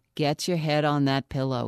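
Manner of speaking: ordinary delivery, nothing marked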